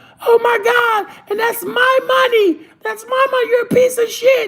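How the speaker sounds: screaming and hollering, very high and shrill. Acting out a Casino scene where Ginger screams outside: imitating Ginger screaming. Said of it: "she just hollering and screaming".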